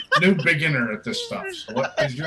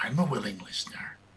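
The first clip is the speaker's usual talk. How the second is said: soft, quiet whispering voice. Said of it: "And from behind you once again".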